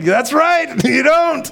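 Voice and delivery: high, loud Southern drawl.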